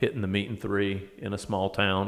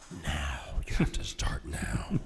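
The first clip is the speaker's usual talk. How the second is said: breathed-out whisper; 5 semitones lower, 4 dB quieter than usual. Telling a story, the speaker acts out hearing God speak: God voice. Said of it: "That's your God voice".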